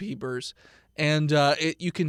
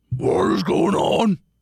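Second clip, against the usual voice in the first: loud, put-on talking-pig character voice; 4 semitones higher, 7 dB louder than usual. Holding up Mister Peepers, the speaker voices him: pig voice. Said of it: "This is my pig voice".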